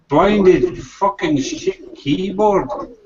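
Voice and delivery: fake Scottish accent. Reading out a viewer comment in a put-on scottish accent. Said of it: "I'll do a, a Scottish accent".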